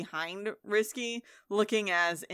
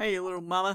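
put-on Southern character voice; 4 dB louder than usual. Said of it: "That's how you gotta get into it".

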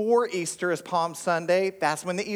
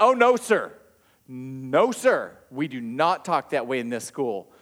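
acted, dead-serious, low, slow scolding voice; 5 semitones lower than usual. Retelling telling a child off at school: imitating own serious scolding. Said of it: "and I'm being so serious".

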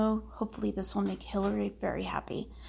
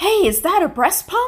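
sudden, very loud, very high, shrill outburst; 10 semitones higher, 10 dB louder than usual. Retelling the x-ray screener's outburst at security: very loud voice. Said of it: "voice goes really, really loud".

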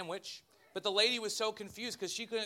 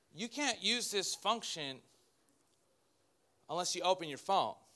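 machine-like, digital assistant-style voice. Retelling a failed attempt to make Siri work while driving: digital Siri voice. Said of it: "turns to me in a digital manner and says".

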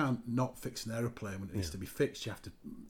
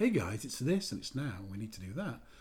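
put-on mild, gentle, easygoing voice. Retelling how a colleague asks for work: imitating Nigel's gentle way. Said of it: "in his very gentle way of".

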